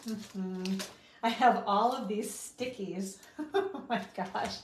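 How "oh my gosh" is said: soft, laughing aside, giggling. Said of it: "I'm just, like, laughing as I pull them off".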